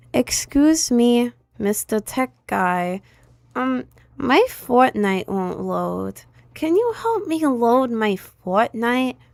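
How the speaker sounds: put-on dumb-sounding, naive, clueless voice. Acting out asking a tech guy for help: imitating own idiotic-sounding request. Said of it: "I'm gonna sound like a goddamn idiot".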